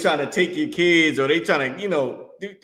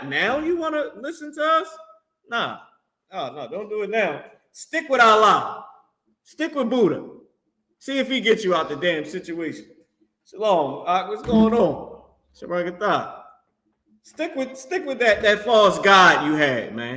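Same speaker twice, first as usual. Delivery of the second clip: mocking, needling, sarcastic, swooping sing-song taunt; 5 semitones higher than usual. Preaching about people who turned to other faiths, sarcastic. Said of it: "I'm being sarcastic".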